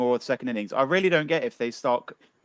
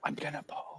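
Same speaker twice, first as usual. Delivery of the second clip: put-on whisper, quieter; 3 semitones higher, 14 dB quieter than usual. Retelling what a player said after winning the toss: imitating Jos Buttler whispering. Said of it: "kind of whispered".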